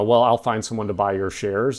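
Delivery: ordinary delivery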